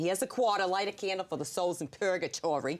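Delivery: put-on heavy Boston accent, laid on thick. Quoting her mother at church when she was a girl, in a thick Boston accent. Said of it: "in her thick Boston accent".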